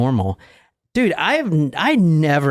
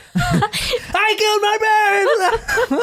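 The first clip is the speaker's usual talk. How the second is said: very high-pitched, very slow, drawn-out scream. Speaker acts out a man's words at two in the morning, retelling a scream. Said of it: "why are you screaming?".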